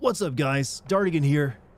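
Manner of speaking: pumped-up, strained, energetic delivery. Recalling his old Titanfall videos, doing that strained, energetic intro voice. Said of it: "more strained and energetic".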